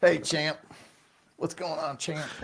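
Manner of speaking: loud, high-pitched, fight-promo hype yelling. Imitating what a fighter always says to hype fights: imitating Shannon Briggs yelling. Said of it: "Starts yelling".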